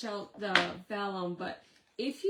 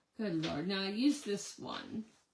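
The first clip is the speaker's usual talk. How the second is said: normal talking voice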